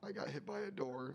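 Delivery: ordinary talk, nothing marked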